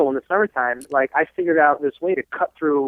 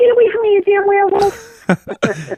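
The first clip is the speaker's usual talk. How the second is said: put-on cute little girl voice, very high and very slow; 4 dB louder than usual. A parent quotes the daughter's line from a favourite story, cute little girl voice. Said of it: "In this cute little girl voice".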